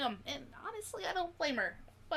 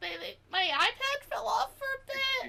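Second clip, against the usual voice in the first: high, loud stuttering, tripping over words; 8 semitones higher, 6 dB louder than usual. Voicing a character who is just stammering after using the horn: stammering character voice. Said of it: "she's just stammering".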